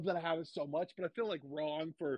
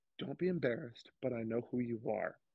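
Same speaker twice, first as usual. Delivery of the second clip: mock whisper, pitched lower; 5 semitones lower than usual. Retelling how the bartender leaned in really close to her: imitating a whisper. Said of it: "leans in really close and whispers".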